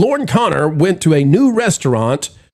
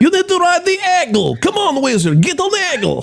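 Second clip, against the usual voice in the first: fake Russian accent, pitched very high; 13 semitones higher than usual. Recalling urging Wizard onto a Dollywood ride: put-on Russian accent. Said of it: "we put on Russian accents".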